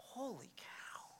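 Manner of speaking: slow, hushed whisper full of awe. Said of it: "the more it's like".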